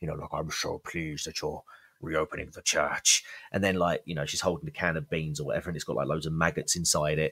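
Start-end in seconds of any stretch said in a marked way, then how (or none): 0.3-3.2 put-on voice dropped into a deep register. Retelling a film scene, imitating the woman greeting the priest: deep voice. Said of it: "a really sort of deep voice as well".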